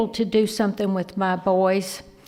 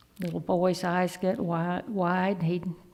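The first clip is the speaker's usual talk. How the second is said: plain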